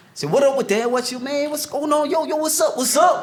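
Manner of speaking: put-on New York street accent.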